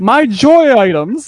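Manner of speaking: put-on high, loud, wailing child's yell.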